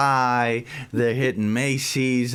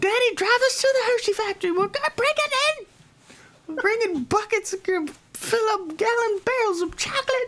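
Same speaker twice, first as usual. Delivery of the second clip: put-on very high voice of a preteen or young teen. Imitating pre-teen kids planning to raid candy places: imitating kids' voice. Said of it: "They all sound exactly like that voice".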